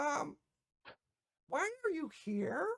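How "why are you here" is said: tiny, high, soft, fairylike dragon voice. Voicing a small fairy dragon who greets a player: small fairy dragon voice. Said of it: "this fairyish small looking dragon".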